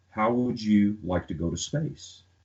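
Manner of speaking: usual speaking voice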